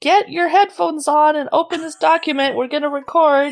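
loud, high-pitched shouting. Retelling a co-host's order to start recording: imitating someone yelling. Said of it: "you're yelling at me".

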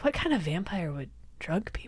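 mimicked sigh. Retelling a tv scene, acting out a character's answer: retelling a sighing reply. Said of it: "Mulder just like sighs and goes like".

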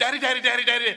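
put-on high, loud, panicked child voice crying out.

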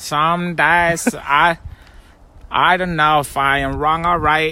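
attempted Icelandic accent. Urged by the other speaker to try it, doing an Icelandic accent attempt. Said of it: "I think you should try it".

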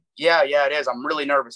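plain

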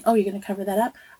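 mock perplexed, bewildered tone. Retelling how people react to gray hair: imitating perplexed people. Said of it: "people get so perplexed about these gray hairs and like".

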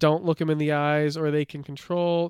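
normal talking voice

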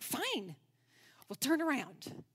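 frustrated, exasperated voice. Retelling own reply to a friend while running late: retelling own frustrated reply. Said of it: "all the frustration I had".

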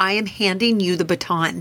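normal talking voice

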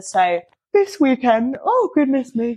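high-pitched yawning sigh, words stretched through yawn. Talking about an early flight and the weekend ahead, yawning while talking. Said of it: "Excuse me, I'm yawning".

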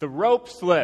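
slow, loud, deliberate, spelled-out delivery.

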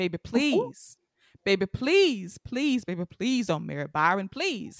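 mock pleading, begging tone. Retelling the Different World episode where Dwayne begs: imitating Dwayne begging and pleading. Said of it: "begging and pleading".

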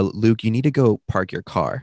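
ordinary talk, nothing marked

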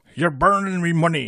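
loud, high, belted cartoon crab voice. Doing a line from the SpongeBob cartoon, in a Mr. Krabs impression. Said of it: "That was quite good".

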